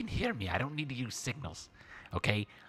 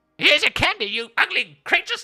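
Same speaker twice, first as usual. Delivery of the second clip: shrill, very high, very loud character shriek; 14 dB louder than usual. Throwing hot candy at creatures while playing a character: yelling in character. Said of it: "I yell out".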